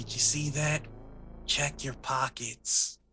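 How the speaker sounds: slow, hushed whisper, very close up. Player's character speaking to a man after a grenade blast outside; whispering. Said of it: "I'm just gonna whisper".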